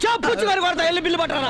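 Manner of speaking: high-pitched, angry voice.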